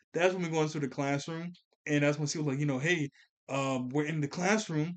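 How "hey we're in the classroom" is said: ordinary talk, nothing marked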